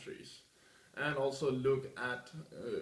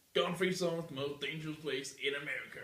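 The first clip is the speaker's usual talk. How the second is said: put-on American accent, best attempt. Quoting the argument one hears most often, put-on american accent. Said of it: "that was my best American accent ever".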